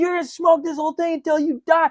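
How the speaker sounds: very high-pitched, shrill, loud screaming. Retelling a man screaming at someone he locked in a room, imitating someone screaming. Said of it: "until he's screaming".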